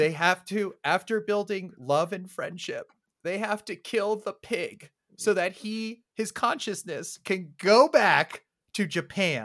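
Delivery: voice catching with emotion. Recounting the ending to the guys, the speaker gets choked up. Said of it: "I'm verklempting over here".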